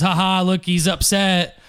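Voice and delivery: plain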